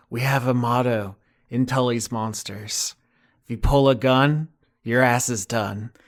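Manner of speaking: pure, soft, close half-whisper, barely audible. Voicing a character who lands next to a corporal's body: half-whispering.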